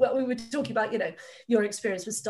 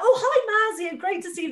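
play-acted very high, warm, really friendly voice; 11 semitones higher, 7 dB louder than usual. Retelling how a school greets a visiting author: imitating a really friendly greeting. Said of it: "when you get really friendly".

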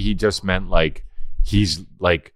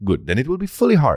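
put-on woman's voice, higher pitch; 7 semitones higher than usual. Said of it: "who does that sound like?".

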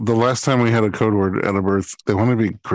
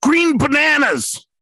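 play-acted sudden, very high shrieked yell. Retelling a woman in labor suddenly calling the code word: imitating a woman screaming. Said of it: "all of a sudden she screams out".

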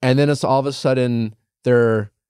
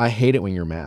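put-on matter-of-fact tone, lower pitch; 4 semitones lower than usual. Retelling what a man said in an argument: imitating Sacco's matter-of-fact tone. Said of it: "in a very kind of, like, matter-of-fact way".

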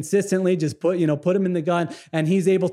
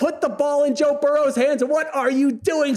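put-on screaming, higher pitch; 8 semitones higher than usual. Retelling screaming at the tv during a game: imitating own past screaming. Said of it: "screaming at my T V saying".

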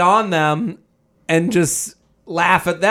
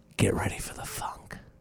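very quiet, soft, breathy, hushed whisper, close; 11 semitones lower, 15 dB quieter than usual. Acting out what one would say to a partner: imitating a whisper. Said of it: "whisper in his ear".

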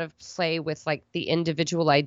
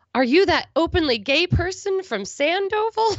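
loud, very high, drawn-out, carrying call; 13 semitones higher than usual. Retelling a checkout girl's question at the Walmart: imitating someone saying it loudly. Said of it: "said really loudly".

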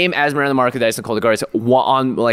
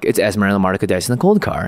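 put-on deadpan delivery, much lower; 3 semitones lower than usual. Describing a video Gavin sent, doing a deadpan Ethan Fleischer imitation. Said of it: "he's just like got this deadpan".

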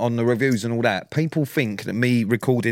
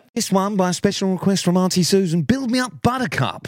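high, cheesy, corny radio DJ announcer voice; 8 semitones higher than usual. Picturing the other host as a wedding DJ, imitating a radio DJ voice. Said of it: "you do it in that voice".

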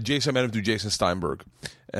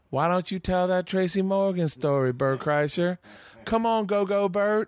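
teasing, egging-on voice, pitched up; 9 semitones higher than usual. Retelling a call from the back during a set: Tony Woods voice. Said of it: "I hear that Tony Woods voice".

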